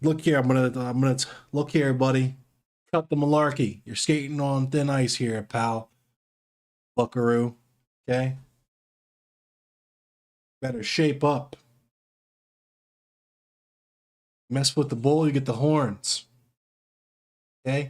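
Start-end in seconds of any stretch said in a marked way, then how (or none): 1.5-16.3 stern, no-nonsense lecturing dad voice.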